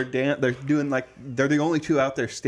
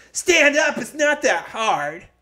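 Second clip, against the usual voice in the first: put-on very high, shrill, snotty, bossy, nasty yell; 12 semitones higher, 5 dB louder than usual. Retelling a girl in the arena crowd yelling at everyone, imitating a bitchy yell. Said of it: "I didn't do it very good justice, but she was like".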